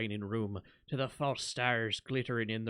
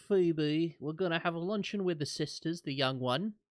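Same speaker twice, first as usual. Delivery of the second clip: put-on London accent, pitched up higher; 6 semitones higher than usual. Asked for their best Zaylor voice, the speaker answers in Zaylor's London accent. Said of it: "Give us your best Zaylor voice".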